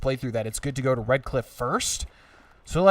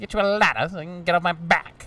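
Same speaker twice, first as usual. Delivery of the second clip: grating character voice, much higher in pitch; 4 semitones higher than usual. Playing a game, repeating the main character's line: grating main-character voice. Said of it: "He like says one of two things, and they're both grating".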